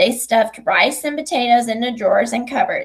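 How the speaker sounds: ordinary delivery, nothing marked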